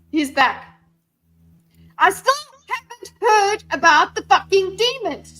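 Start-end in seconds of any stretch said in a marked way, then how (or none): 1.9-5.3 very high-pitched shouting yell. Talking near a cat named Daisy, then apologizing to her: yelling. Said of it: "Sorry, Daisy. I'm yelling".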